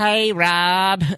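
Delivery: put-on older boomer-type voice. Showing the old character Larry, a boomer Trump supporter: Larry character voice. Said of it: "I can't even do the voice really anymore".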